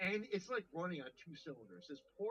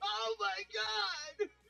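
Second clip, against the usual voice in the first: put-on scream, higher and louder; 8 dB louder than usual. Retelling a shopper's outburst at the mall: imitating someone screaming. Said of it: "he starts screaming".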